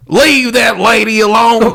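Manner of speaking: put-on mixed Texas and Southern accent. Repeating the other speaker's line after asking about it, in a Texan-Southern accent. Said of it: "a mix between Texan and Southern".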